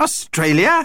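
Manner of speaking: high, horrified, exclaiming tone. Hearing the family is going to australia, horrified exclamation. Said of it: "Exclaimed Vlad, looking horrified".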